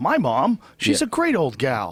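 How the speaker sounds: high, slow, sing-song voice, drawn out and swooping. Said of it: "Pryor was much more subtle".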